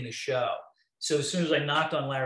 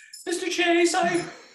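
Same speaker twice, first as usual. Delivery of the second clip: mock voice rising very high, higher and louder; 6 dB louder than usual. Retelling own nervous answer to a job offer: imitating own voice going way up in pitch. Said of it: "I think my voice went up, like, five octaves".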